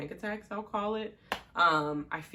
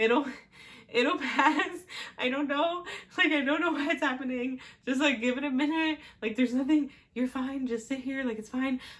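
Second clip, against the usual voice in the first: mock laughing and crying at once, high, heaving; 9 semitones higher, 3 dB louder than usual. Retelling calming the boyfriend during a panic attack: imitating laughing while crying and heaving. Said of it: "laughing, crying, and heaving at the same".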